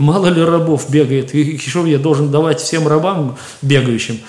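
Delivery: normal talking voice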